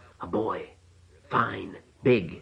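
biting, sharp half-whisper, drawn out very slowly. A narrator reads a midwife showing a man a tightly wrapped bundle, half-whispered sharply. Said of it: "she whispered sharply".

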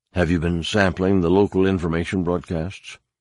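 ordinary talk

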